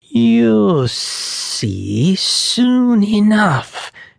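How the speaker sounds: very high, very slow hissing. The slithering guide answers the boy scrambling to follow, hissed. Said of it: "hissed Brian".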